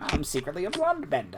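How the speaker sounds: put-on transatlantic villain voice. Playing along after another player imagines Amon from Korra unmasked, doing Amon with a transatlantic accent. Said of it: "with a transatlantic accent".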